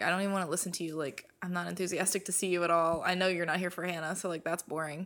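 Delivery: ordinary delivery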